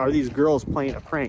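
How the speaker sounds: usual speaking voice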